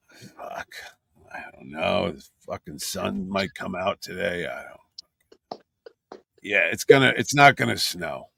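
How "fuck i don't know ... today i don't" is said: low, slow, creaky, gravelly, garbled vocal fry mumble. Answering a weather question in character: low, garbled, creaky voice. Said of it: "you gotta bring the register down, and you gotta garble. You gotta get that vocal fry".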